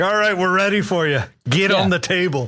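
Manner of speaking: attempted, put-on Scottish accent. Acting out a Scottish acupuncturist calling a patient in: attempted Scottish accent. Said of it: "was I attempting a Scottish accent?".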